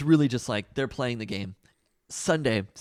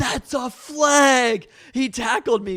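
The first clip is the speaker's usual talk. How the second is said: put-on child's scream, higher and louder; 13 semitones higher, 7 dB louder than usual. Retelling how a child screamed at the referees after a tackle: imitating a kid screaming. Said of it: "he is screaming at the referees".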